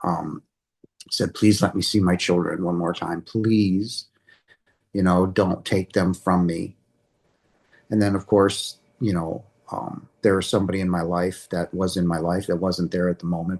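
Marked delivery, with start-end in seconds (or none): 1.3-6.8 mock desperate, pleading tone. Retelling begging Jesus not to take the children: retelling own desperate begging. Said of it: "I was begging for my life".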